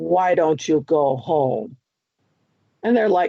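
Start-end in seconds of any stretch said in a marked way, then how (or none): 0.0-1.8 deep, low male voice. Retelling what a man's voice coming out of there said, deep man's voice. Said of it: "It was a deep voice".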